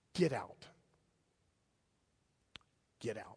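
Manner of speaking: acted calm, low, authoritative, commanding voice. Retelling the story's command to the demons, in a calm, authoritative voice. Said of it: "in a calm but authoritative voice".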